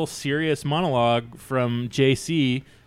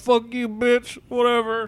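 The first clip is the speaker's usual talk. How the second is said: put-on very high-pitched drunken yelling and screaming; 9 semitones higher than usual. Retelling a movie scene where a drunk character screams at the house: imitating a drunk screaming. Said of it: "screaming at the house drunk".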